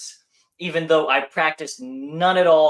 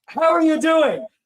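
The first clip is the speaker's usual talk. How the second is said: put-on man's yelling, higher and louder; 4 dB louder than usual. Retelling how an acquaintance at the gym greeted them: imitating a guy yelling. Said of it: "he yells at me".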